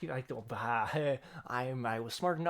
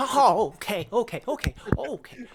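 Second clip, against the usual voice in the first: very loud, high, cowering frightened stammering babble; 8 semitones higher, 12 dB louder than usual. Role-playing a child shrinking back from someone leaning in close and menacing: shriveling up in fear. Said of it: "he kind of shrivels up and goes".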